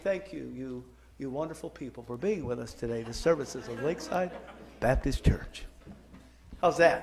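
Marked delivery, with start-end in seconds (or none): 0.0-5.6 low radio announcer voice. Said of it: "That my radio announcer voice?".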